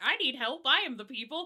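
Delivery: high, pleading, begging voice. Acting out a Tremere in a dirty cloak asking for help: acting out a Tremere asking for help. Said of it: "a Tremere in, like, a kinda dirty cloak was like".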